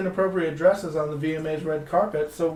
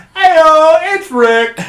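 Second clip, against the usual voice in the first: put-on announcer voice, much louder and higher; 11 semitones higher, 15 dB louder than usual. Showing how he'd always greet his mother-in-law, in a radio announcer voice. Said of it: "keep the radio announcer voice".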